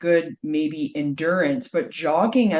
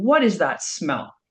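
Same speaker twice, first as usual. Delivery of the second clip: put-on furious, angry voice. Retelling being scolded by mom after coming home: imitating a furious mom. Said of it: "my mom being furious at me".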